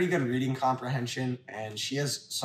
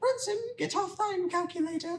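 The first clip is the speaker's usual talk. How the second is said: very high, girlish, put-on schoolgirl voice. Recalling reading Romeo in English class, scolding a classmate, in a schoolgirl voice. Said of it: "schoolgirl voice".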